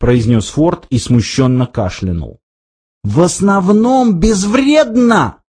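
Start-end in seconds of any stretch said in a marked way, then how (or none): 3.0-5.3 exclaimed high-pitched outburst, half shouting. Narrator reads a character repeating his companion's words back; crying out. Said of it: "вскричал Артур".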